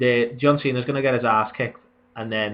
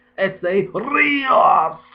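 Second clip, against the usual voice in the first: put-on Spanish accent, higher pitch; 7 semitones higher than usual. Imitating how a ring announcer says a name with an accent: imitating Lillian Garcia's announcer accent. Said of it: "Like that".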